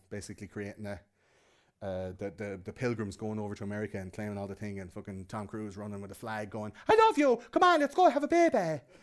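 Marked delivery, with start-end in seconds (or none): 6.9-8.8 bad put-on Irish accent, much higher and louder. Describing him running with a flag, do Tom Cruise's worst Irish accent ever. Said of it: "in the worst Irish accent ever".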